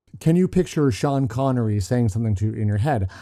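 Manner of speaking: ordinary delivery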